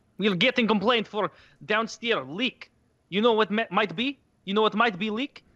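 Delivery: put-on Eastern European accent with broken English. Quoting a Bosnian man who came in, in an Eastern European accent. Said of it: "They do like that Eastern European accent".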